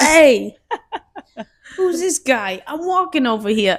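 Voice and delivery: loud Italian New York wise-guy voice. Friends trying out New York wise-guy sayings; New York wise guy accent. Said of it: "I think of like Goodfellas and stuff".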